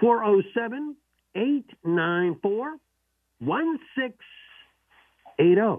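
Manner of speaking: slow, loud, spaced-out delivery, nice and slow.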